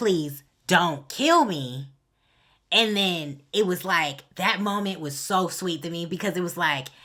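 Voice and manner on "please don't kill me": mock pleading, louder, much slower. Retelling a scene, voicing a woman pleading with a man not to kill her, acting out pleading. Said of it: "she was pleading like".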